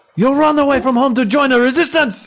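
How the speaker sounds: put-on French-accented speech. Playing a mother scolding her runaway son Jacques: French accent. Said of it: "it's the French accent".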